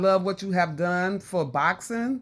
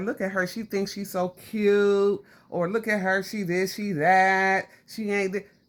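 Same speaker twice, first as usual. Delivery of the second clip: ordinary talk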